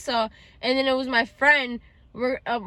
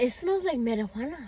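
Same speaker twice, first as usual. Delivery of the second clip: put-on soft slight Spanish accent; 5 dB quieter than usual.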